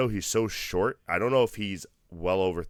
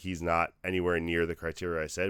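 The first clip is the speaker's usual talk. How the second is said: plain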